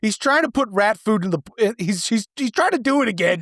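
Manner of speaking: imitated woman's yell. Retelling a scene where a woman yells to her boyfriend, imitating a woman yelling. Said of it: "she yells at her boyfriend".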